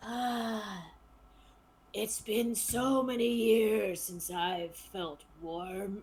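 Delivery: loud, rasping voice like a dead body. Narrator voices a corpse as two adventurers come close, in a rasping corpse voice. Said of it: "you both hear a rasping voice".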